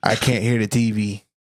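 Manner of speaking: ordinary talk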